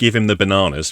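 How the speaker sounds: normal talking voice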